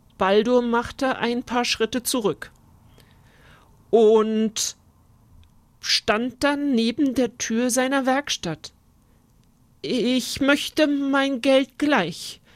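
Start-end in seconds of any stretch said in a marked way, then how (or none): 9.8-12.3 trembling, quivering, unsteady voice. Backing away from a knight's sword, a craftsman repeats his demand: trembling voice. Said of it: "wiederholte er mit bebender Stimme".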